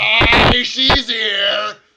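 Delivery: shrill, very loud, high bellowing. Voicing a dwarf who cuts into the conversation: cutting in loudly. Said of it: "cuts in loudly".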